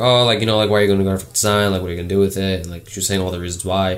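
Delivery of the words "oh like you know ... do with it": plain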